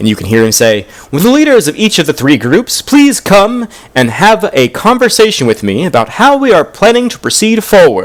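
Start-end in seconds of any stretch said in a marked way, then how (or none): 1.1-8.1 very high, booming, hall-filling call. A man raises his hand and calls the three group leaders over, booming voice. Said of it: "suddenly his voice booms through".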